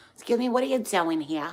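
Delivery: put-on New Jersey accent. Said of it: "It's the worst accent ever".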